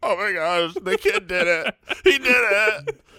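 high, slow, weepy, acted tearful voice. Retelling a moment at a movie, looking over at Jason: mock crying while retelling. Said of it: "and I'm crying".

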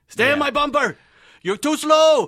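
shrill screaming, very high and very loud. Act out the driver over the walkie-talkie during a fast ride, imitating Hurley screaming in a German accent. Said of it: "he's just screaming at me".

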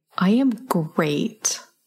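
big emphatic stress on great. Asked by her co-host how she is, answering with an emphatic 'great'. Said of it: "You sound super great".

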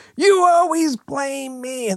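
very high shriek, dragged out long. Retelling someone being woken at six in the morning: imitating a scream. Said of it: "wakes up and he screams".

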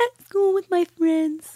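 put-on very high little girl's voice. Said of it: "her voice. Exactly".

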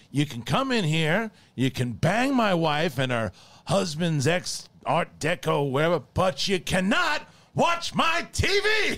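high-pitched, furious screaming. Retelling a movie scene, shout at Ralph, imitating Al Pacino screaming. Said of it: "He's like screaming at him".

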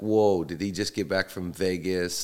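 ordinary talk

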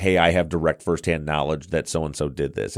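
ordinary talk

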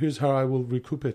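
soft, lilting impression. Mocking the man who overpaid for Twitter, quoting his plan in a lilting Elon Musk voice. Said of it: "I just sort of speak in a lilting".

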